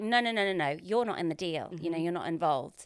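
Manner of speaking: ordinary talk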